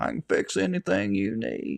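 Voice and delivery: slow, easy, breathy movie-star voice. Mocking a man at a council meeting: Matthew McConaughey voice. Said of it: "In his best Matthew McConaughey voice".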